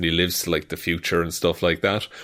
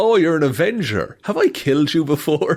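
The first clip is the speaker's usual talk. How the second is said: mock smugness, very high, swooping voice; 9 semitones higher, 4 dB louder than usual. Retelling a leaked trailer clip, imitating Kang's smug voice. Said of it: "shit-eating voice he's using".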